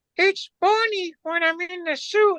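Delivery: tiny, small, very high-pitched little voice. Acting out the man in the suit answering you with kids around, little voice. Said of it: "you hear this little voice go".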